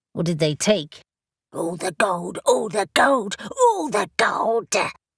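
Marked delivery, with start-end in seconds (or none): 1.5-4.7 small, rasping little creature voice, repeating itself. A narrator reads a creature repeating its answer to a questioner, rasping little voice. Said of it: "in its rasping little voice".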